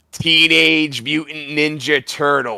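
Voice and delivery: slow, drawn-out movie-star style actor voice.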